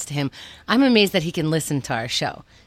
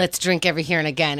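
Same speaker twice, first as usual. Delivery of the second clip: ordinary talk, nothing marked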